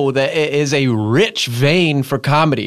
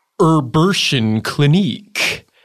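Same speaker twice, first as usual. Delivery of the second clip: goofy, silly, daft put-on joke voice. Showing that anything becomes a joke said a certain way: goofy silly voice. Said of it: "check this out. ... say it in a goofy way".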